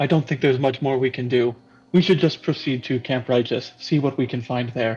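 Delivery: impatient, short-on-patience, urging tone. Voicing a character urging the group to move on: impatient. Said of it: "uncharacteristically kind of impatient".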